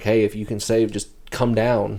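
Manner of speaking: ordinary talk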